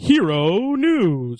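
weird put-on voice with the word Hero drawn out. Saying the segment title when asked for a weird fashion: weird Sesame Street-like put-on voice. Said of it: "say Hero News in some weird fashion".

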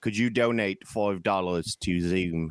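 slow, deliberate put-on voice, leaning on each word. Pretending to be a founder asking for donations: Michael Caine voice. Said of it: "I don't know why I sound like Michael Caine".

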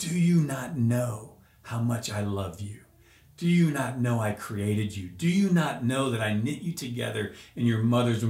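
stern, aggressive, forceful fatherly tone. Retelling a man's words during prayer: imitating a stern, aggressive, fatherly voice. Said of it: "in a very stern, aggressive, but fatherly voice".

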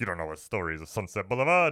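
put-on old-fashioned film noir narrator voice. Describing a film's opening narration, mimicking it in an old-time film noir voice. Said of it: "That's my old-time voice".

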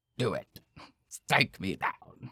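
put-on dark lord villain voice. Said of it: "a Nazi Dark Lord of the Sith voice".

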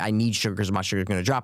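normal talking voice

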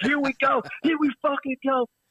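shrill, very high, fired-up, wound-up yelling. Retelling cheering at a football game in the stands: retelling own yell. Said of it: "and I'm starting to yell".

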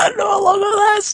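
very high, loud mock wail.

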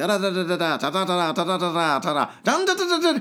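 alien-like gibberish babbling voice. Retelling a man on a train arguing over seats: Mars Attacks alien gibberish. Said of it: "do I sound like the fucking aliens from Mars Attacks?".

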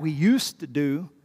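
slow delivery, stress leaned on USED. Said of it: "emphasis on the word used".

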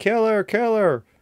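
very high, excited screaming. Retelling how a mother screamed at the tv: imitating someone screaming. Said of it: "screaming at the T V".

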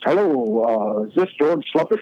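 refined, sophisticated voice with a drawn-out "hello". Retelling a phone call and quoting the caller's first words, imitating Rube's sophisticated voice. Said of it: "very sophisticated sounding speaking voice".

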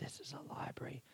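very quiet, hushed, breathy whisper. Reading a joke aloud, the librarian's line: whispering. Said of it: "Librarian whispers".

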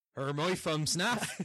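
Bristolian accent. A player repeats the phrase for a listening game, in a true Bristolian accent. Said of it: "In the true Bristolian accent".

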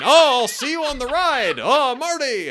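high-pitched, slow, drawn-out called-out voice.

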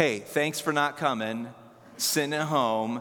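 low, mild, teasing, lightly sarcastic voice. A pastor thanks the people watching online from home, a little sarcastic. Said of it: "there's a little sarcasm".

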